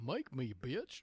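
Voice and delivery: very loud cartoon-character voice yelling. Retelling a cartoon character banging on a door next door, cartoon character impression. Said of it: "your impression that was pretty good".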